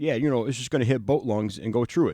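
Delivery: put-on terrible Chicago accent, "both" pronounced like "boat". Retelling a coworker's words about arrows: imitating a terrible chicago accent. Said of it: "because he talks with a terrible Chicago accent".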